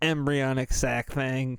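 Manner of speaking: machine-like computerized robotic voice. Repeating a phrase after noticing it sounded odd: robotic computer-like voice. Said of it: "Why do I sound like a computer".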